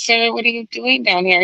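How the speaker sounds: very anxious, concerned voice. Recapping a film, the speaker acts out Alfred's line to Bruce, very concerned. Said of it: "like very concerned".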